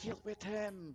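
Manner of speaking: frightened speech. Storyteller voicing Nicodemus as he looks back at his coterie, Nicodemus, terrified. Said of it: "with inaudible expression of terror".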